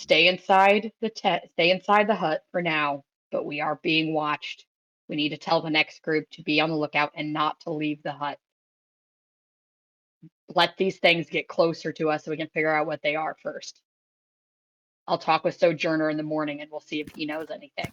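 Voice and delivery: hushed, quiet half-whisper. Leaning over to Crixus in character, warning him quietly: half-whispering. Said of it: "I'll just whisper to him".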